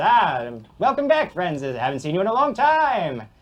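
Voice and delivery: smug, high-pitched, loud, self-assured voice.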